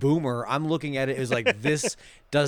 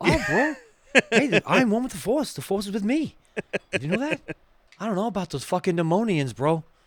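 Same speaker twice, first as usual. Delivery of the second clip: put-on Boston tough-guy voice, higher-pitched; 7 semitones higher, 3 dB louder than usual. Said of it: "he just starts talking like fucking [name]?".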